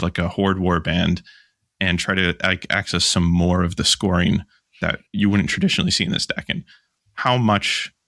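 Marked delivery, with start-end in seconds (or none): none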